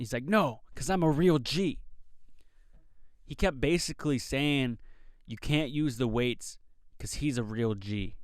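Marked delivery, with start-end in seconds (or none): 0.2-1.8 play-acted loud, raised yell. Retelling a gym-goer refusing another guy the weights, imitating someone yelling. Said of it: "he was yelling at this guy".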